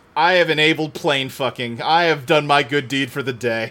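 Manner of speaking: plain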